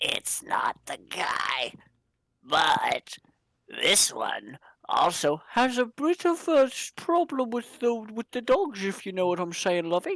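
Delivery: slow, drawn-out, unhurried stage half-whisper. Voicing Floof leaning in to tell Nyx something: half-whispering in character. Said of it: "That's why Floof was whispering".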